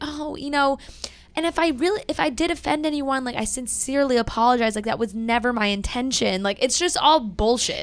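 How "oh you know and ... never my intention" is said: put-on sweet, girly voice. Mocking a woman's apology from her tv appearance, in a put-on sweet girl voice. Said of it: "She turns on the sweet girl voice".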